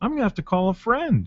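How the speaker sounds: put-on puppet frog voice. Acting out a bit for another speaker: Kermit the Frog voice. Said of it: "It goes a little something like this".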